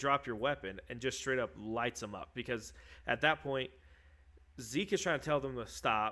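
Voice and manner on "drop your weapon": ordinary talk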